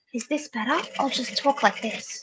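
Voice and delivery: soft, hushed whisper. Trying to speak more quietly on a call: whispering. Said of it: "What I can maybe do is try and whisper".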